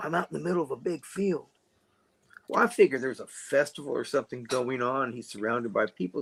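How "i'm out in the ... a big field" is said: whisper, pitched higher. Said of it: "quit whispering".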